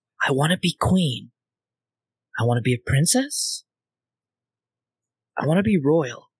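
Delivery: whispering quietly. Voicing a character who fiddles with a badge: quiet whisper. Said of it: "quietly whispering".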